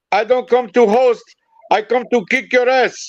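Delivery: bad, put-on Puerto Rican accent. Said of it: "I'm doing a [name] horrible accent".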